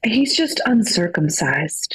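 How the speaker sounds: hushed, soft whisper, very close. Retelling how a friend answered in the speaker's ear: imitating a whisper. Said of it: "grabs my shoulder and whispers in my ear".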